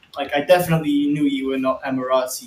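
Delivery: ordinary talk, nothing marked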